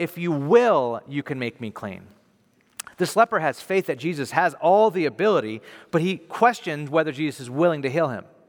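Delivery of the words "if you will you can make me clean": emphasis placed on "will".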